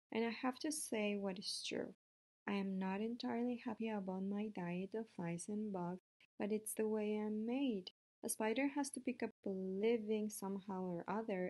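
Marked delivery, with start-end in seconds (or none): none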